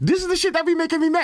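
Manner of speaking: voice suddenly jumps way up, very high. Complaining about Apple's charging speeds, slipping into a high voice. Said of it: "Why did I go to the high voice?".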